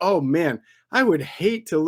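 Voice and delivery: heavily sarcastic, insincere, mock regretful tone. Reading out a fan's tweet with a reverse jinx: imitating a sarcastic tweet. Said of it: "the sarcasm was dripping".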